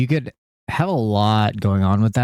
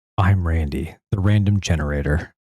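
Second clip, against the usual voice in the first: epic film trailer announcer narration voice; 3 semitones lower than usual. A podcast co-host introduces himself on the show, movie trailer voice. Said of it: "that was like your movie trailer voice".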